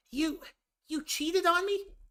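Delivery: voice pushed very high with a swinging, lilting tune. Acting out a Sonic the Hedgehog scene, attempting a Tails voice. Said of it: "I don't have a high enough voice to do a Tails voice".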